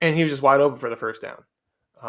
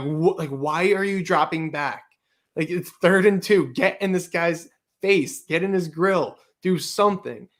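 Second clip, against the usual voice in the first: play-acted, agitated, screaming rant; 4 semitones higher than usual. Retelling screaming at the tv during a play: retelling screaming at the tv. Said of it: "I was screaming at the T V".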